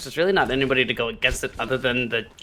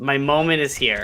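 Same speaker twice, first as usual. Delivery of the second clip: ordinary talk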